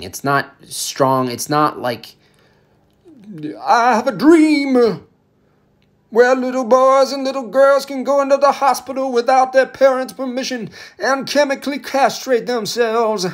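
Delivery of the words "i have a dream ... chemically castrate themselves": mock sermon-style oratory with preacher cadence. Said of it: "Shut up, M L K".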